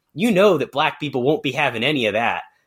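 ordinary delivery

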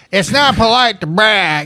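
high-pitched grandmother voice. Retelling the grandma's answer to Dwayne: imitating his grandma. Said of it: "And she's like".

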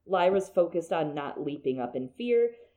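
ordinary delivery, nothing marked

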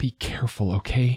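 quiet, muttered under the breath. Dad catches his child up tight in his arms and speaks, muttered. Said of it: "he muttered".

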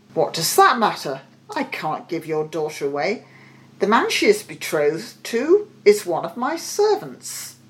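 plain

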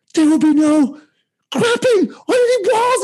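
very high, climbing scream at the top of the lungs. Retelling how the graduate assistant addressed the hall: imitating someone screaming. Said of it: "he starts screaming at the top of his lungs".

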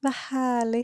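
very dreamy, dreamlike tone. Describing a habit of sometimes speaking like this: very dreamy tone. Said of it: "jag ibland säger väldigt drömskt så här".

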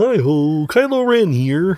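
very high, very slow, slipping froggy voice. Showing how an attempt at Adam Driver's voice comes out: Adam Driver voice sounding like Kermit. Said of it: "whenever I try to do Adam Driver's voice".

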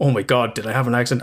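put-on panicked voice. Retelling waking up in the night, imitating own panicked voice. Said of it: "fucking panicked, going".

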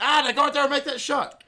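very high, shrill, loud shout hollered from afar. Retelling a movie scene of a teammate being urged on: imitating someone shouting. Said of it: "just shouting outside".

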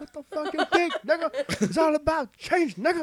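squeaky voice pushed way up high. Retelling what the president always says: Obama impression. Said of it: "This Obama impression".

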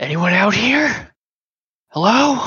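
swooping stage whisper. A game master voices someone calling out to the players, in a stage whisper. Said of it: "You hear in a stage whisper almost".

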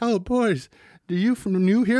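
put-on high, slow, drawn-out elderly woman voice. Retelling a scene where an old lady questions some boys, in an old lady voice. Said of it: "the old lady who was like".

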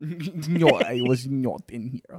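put-on, bad, fake Russian accent. Retelling a favorite scene, the speaker quotes the girl in a bad Russian accent. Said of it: "we're not doing bad Russian accents".

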